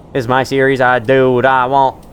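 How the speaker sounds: sliding into a poorly done Australian accent. Series host, after reading an item description, in a bad australian accent. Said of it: "I don't know why I'm talking like that all of a sudden".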